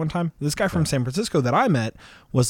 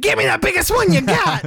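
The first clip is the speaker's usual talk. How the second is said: mock angry small voice, higher and louder; 5 dB louder than usual. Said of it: "the most angry little voice I've ever heard".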